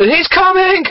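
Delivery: very high, loud cry. Narrator reads Clifford's line as Raiju charges toward the teens, crying out. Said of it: "Clifford cried".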